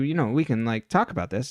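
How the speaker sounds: normal talking voice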